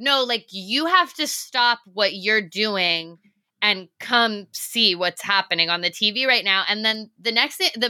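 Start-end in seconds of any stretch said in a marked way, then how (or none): none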